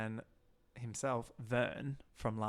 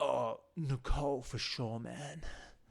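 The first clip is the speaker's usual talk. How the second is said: put-on relaxed young guy voice. Retelling how Joe answers the boys: imitating Joe's laid-back lad talk. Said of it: "The way he speaks with the guys".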